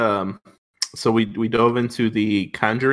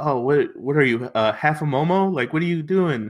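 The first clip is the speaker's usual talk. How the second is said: mock movie gangster voice, yelling and scolding; 3 semitones higher than usual. You are retelling a movie scene where he confronts one of his employees, imitating a movie gangster yelling. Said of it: "he was like yelling at one of his employees".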